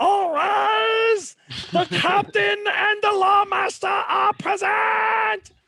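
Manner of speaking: shrill, very high, loud kobold yell. Narrating a scene, the speaker voices a kobold slamming its hammer: high-pitched kobold yell. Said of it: "yells in a very high pitched voice".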